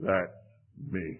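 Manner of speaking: labored, halting, breathy whisper. Retelling what Danny said to the speaker, imitating Danny's halting speech. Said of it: "in a very halting way".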